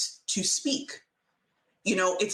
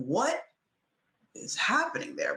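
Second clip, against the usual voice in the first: ordinary talk, nothing marked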